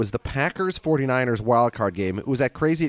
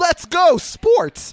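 sincere, very high, loud, eager sports whoop, acted; 5 dB louder than usual. Retelling what a bearded guy watching the game said, imitating an enthusiastic cheer. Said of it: "like enthusiastically".

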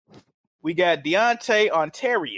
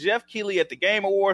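ordinary delivery

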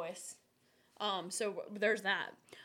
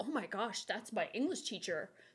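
usual speaking voice

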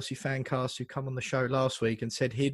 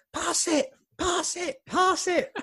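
mock very high, furious scream. Recalling watching a player run at goal, reenacting screaming at him. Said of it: "i'm screaming at him".

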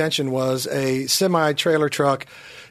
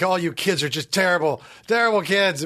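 put-on fed-up tone; 2 semitones higher than usual. Retelling what Miss McNamara said, who hated them: imitating Miss McNamara, fed up. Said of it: "she'd be like".

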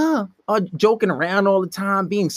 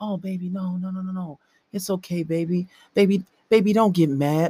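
low, soothing, placating, pleading voice; 4 dB quieter than usual. Demonstrating how a man talks to a woman so she won't be mad: lowered voice. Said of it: "you want to lower your voice".

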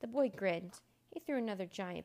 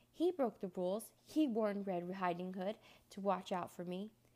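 ordinary delivery

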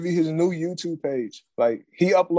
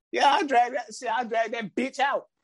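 put-on squeaky ranting voice, much higher; 7 semitones higher than usual. Retelling what a man said, imitating his little squeaker voice. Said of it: "ranting like he always do in his little squeaker voice".

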